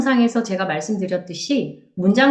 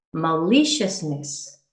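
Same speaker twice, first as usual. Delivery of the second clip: maliciousness with stressed second syllable li; 4 semitones lower, 4 dB quieter than usual. Explaining how stress shifts in longer words: stress on second syllable li. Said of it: "이음절로 강세가 옮겨져서".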